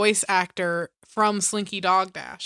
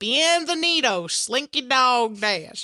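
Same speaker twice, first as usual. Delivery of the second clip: put-on cartoon character accent, higher; 4 semitones higher than usual. Retelling a man in line impersonating the ride voice: Slinky Dog accent. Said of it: "In Slinky Dog's accent".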